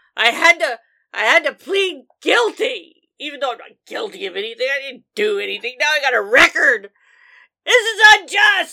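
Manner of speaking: shouting. A man in a bar, asked what he's yelling about, answers yelling. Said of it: "What are you yelling about in this fine bar?".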